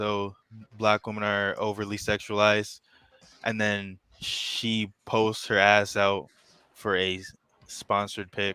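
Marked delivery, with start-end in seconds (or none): none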